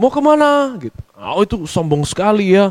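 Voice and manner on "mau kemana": very high, lifted intonation, high pitch. Illustrating a person whose high intonation gets taken as arrogant: high intonation. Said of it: "intonasi bicaranya itu tinggi".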